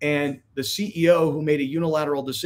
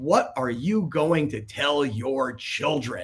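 mock pointed, disapproving, very judgmental tone. Retelling a tv reporter's question from an interview, in a mock-judgmental tone. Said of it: "Like this very judgmental tone".

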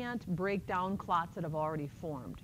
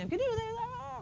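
very high, slow, drawn-out yelling. Retelling how everyone yelled at a nervous patient showing stroke symptoms, retelling a yell. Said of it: "Everybody's yelling".

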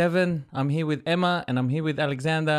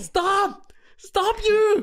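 very high, alarmed screaming; 4 dB louder than usual. Retelling a car reversing toward them: imitating own screaming. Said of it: "I just start screaming".

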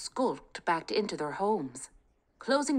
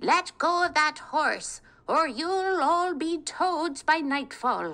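put-on very high old woman's screech; 9 semitones higher, 5 dB louder than usual. Narrating a story, voicing an old woman who interrupts Kate: screeching old woman. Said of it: "screeched an old woman, ... Kate was lost in her thoughts of him when suddenly a screeching voice shattered the peace. ... screeched an old woman".

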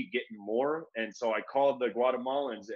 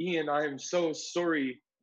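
put-on Canadian accent in a girl's voice; 4 semitones higher than usual. Speaker recalls being walked off to jail, quoting the canadian girl in a canadian accent. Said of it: "she just said in her Canadian accent".

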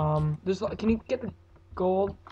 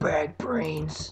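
awful, terrible attempt at a zombie voice; 4 semitones lower than usual. Playing a game for viewers as zombies close in: terrible zombie impression. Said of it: "That was a terrible impression".

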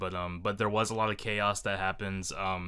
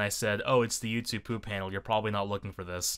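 ordinary delivery

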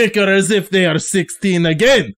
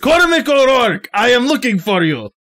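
calling out loudly; 4 semitones higher than usual. Narrating a story, voicing a character calling out to someone, shouting. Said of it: "And then Njostroy shouts".

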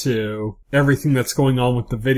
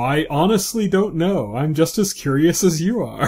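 calm, cool, unbothered, needling, taunting tone; 4 semitones higher than usual. Retelling a scene where a character taunts Elliot: imitating Philip Price calmly mocking. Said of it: "he's just very calmly talking shit".

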